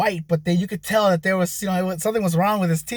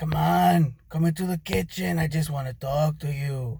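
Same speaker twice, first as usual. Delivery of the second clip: odd, luring, coaxing creepy voice; 3 semitones lower, 4 dB quieter than usual. Speaker retells an unknown man urging her into the kitchen while she sleeps; weirdo-sounding man's voice. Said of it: "I make him sound like a weirdo".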